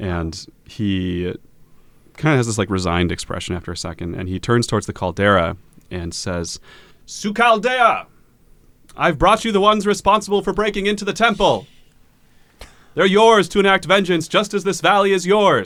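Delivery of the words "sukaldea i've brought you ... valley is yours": thundering, very loud, very high booming call. Voicing a character who addresses the caldera: magically amplified booming voice. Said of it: "thaumaturging, like, super loud as he says this".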